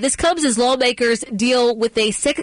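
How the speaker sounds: ordinary talk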